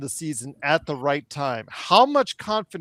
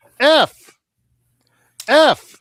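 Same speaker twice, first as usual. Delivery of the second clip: put-on harsh voice, higher and louder; 11 semitones higher, 12 dB louder than usual. Doing an impression of Joe grading papers for a guest: imitating Joe grading papers. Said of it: "my impersonation of Joe grading papers".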